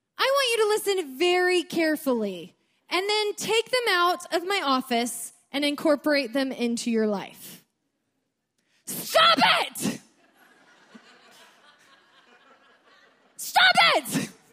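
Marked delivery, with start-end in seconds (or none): 8.9-14.3 very slow, drawn-out, swooping yell. Retelling what a man yelled at her in his office, retelling a yell. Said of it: "And he literally yells at him".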